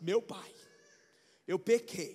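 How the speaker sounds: put-on thick, deep, slow, penitent voice. Acting out the son's rehearsed speech to his father, in a put-on deeper voice. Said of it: "vou engrossar a voz e vou falar".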